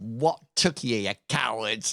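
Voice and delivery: commanding, authoritative voice. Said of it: "a commanding presence".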